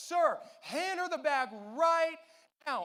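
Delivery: yelled loudly, pitched high. Retelling how the man taking tickets yelled at them, imitating someone yelling. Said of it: "he yells at us".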